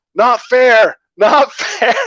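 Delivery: mock, very slow, high, loud, stretched-out scream. Retelling a superhero's fight with a criminal, imitating someone screaming. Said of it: "he starts screaming".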